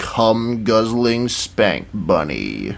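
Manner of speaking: voice dropped very low, close to the mic. Recalling someone who got close to the mic, dropping voice super low. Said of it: "dropped their voice, su- voice super low".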